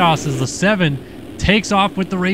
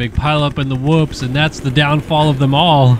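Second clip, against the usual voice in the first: ordinary talk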